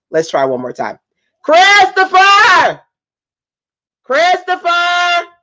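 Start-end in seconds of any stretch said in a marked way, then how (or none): 1.4-5.2 very high-pitched, loud, calling scream. Parent calling a child from the office to come over, screaming a name. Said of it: "stop screaming".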